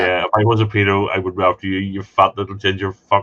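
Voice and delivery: plain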